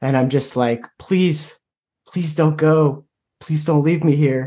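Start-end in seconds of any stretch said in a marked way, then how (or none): 1.0-4.5 tearful, crying, pleading tone. Character on his knees holding a woman in his arms, crying while pleading. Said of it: "I'm just kind of like crying over her".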